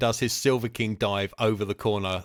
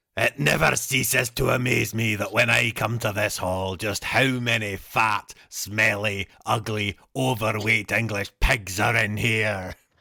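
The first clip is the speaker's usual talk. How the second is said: good, convincing put-on Scottish accent. A character takes the mic in a hall, in a convincing put-on accent. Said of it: "That was actually quite a good accent".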